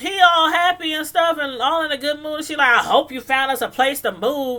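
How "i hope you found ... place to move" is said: snide, biting, nasty sarcasm. Retelling what a character said to him: imitating a sarcastic, nasty remark. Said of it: "really sarcastic and nasty now".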